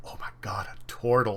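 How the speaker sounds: very quiet, muttered under breath. Retelling how a man reacts on seeing you: very quiet, under his breath. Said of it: "very quietly under his breath".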